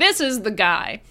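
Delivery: plain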